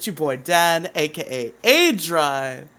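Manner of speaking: very drawn-out, slow speech with faint British twang. Showing how a man says his own name: imitating Dan's slight British twang. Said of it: "It sounds a little British".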